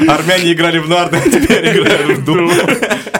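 slow, loud, laughing delivery.

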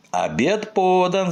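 very high-pitched shouting. Moominmamma calls out to the household, shouting. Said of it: "закричала Муми мама".

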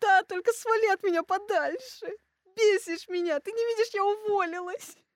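sobbing outburst. Retelling crying on the way home when a friend offered napkins, retelling a sobbing outburst. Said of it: "всю дорогу домой рыдала".

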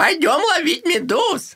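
dopey, very high, swooping cartoon voice. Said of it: "медуз голосом Патрика".

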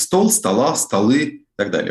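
stress on the endings in стола, столы.

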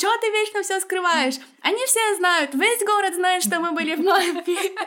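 very high-pitched, loud yelling. Retelling how an Italian man yelled at a woman, retelling a yell. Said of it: "начал на нее орать".

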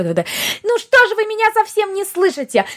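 mock-hysterical, acted-up voice. Showing the second version of a woman's voice, when she turns mock-hysterical. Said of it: "второй вариант ее голоса, это когда она уходит на истерику".

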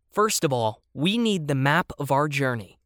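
plain reading voice

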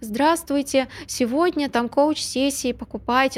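put-on meek, unsure, timid little voice. Describing a client's sales stories to an audience, imitating an insecure client. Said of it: "она вот таким голосом говорит".

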